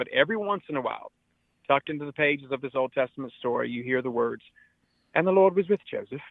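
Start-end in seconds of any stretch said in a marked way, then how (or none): 5.1-6.2 put-on British accent, pitched up. Telling an Old Testament story, quoting a line of it in a British accent. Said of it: "I say with a British accent".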